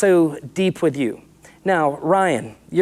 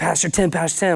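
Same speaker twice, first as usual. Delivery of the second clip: put-on panicked voice with hyperventilating breathing. Retelling a friend's phone call about a shooting: imitating Mike hyperventilating. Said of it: "he's hyperventilating".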